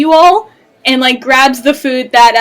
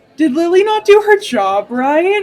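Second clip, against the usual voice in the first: smug, swaggering, cocky voice, high pitch; 5 semitones higher than usual. The game master voices Viper slipping an arm around a player character's shoulders, cocky voice. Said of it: "you hear just this cocky ass voice like".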